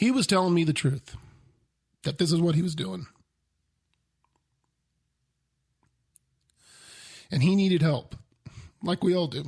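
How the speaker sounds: choked-up voice, catching with emotion. Telling about a stranger asking for gas money, getting choked up. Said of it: "I get choked up over shit like this".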